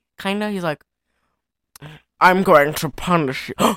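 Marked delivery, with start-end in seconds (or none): 2.2-3.8 slurred put-on villain voice. Describing how a lieutenant character talks: slurred Christopher Lee voice. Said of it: "slurred Christopher Lee".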